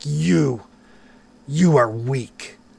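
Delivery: slow, thundering, booming voice. As the players knock the sword from his hand, a voice addresses them, booming. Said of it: "you all hear this booming voice saying".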